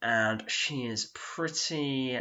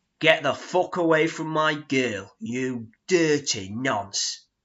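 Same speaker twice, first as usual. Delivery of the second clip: enraged, very drawn-out, loud, slow furious shout; 3 semitones higher, 8 dB louder than usual. Retelling how a friend shouted at a man near a girlfriend: imitating an angry shout. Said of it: "shouts in his face".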